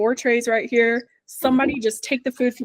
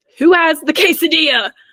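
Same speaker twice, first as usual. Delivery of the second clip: loud, high-pitched shouting; 5 semitones higher, 7 dB louder than usual. Retelling yelling at a big party table: retelling yelling at customers. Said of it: "an excuse to yell at people".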